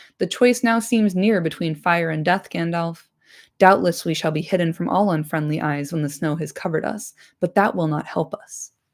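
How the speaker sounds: plain reading voice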